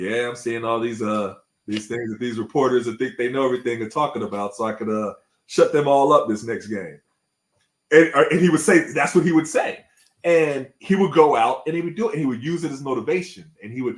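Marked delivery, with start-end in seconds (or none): none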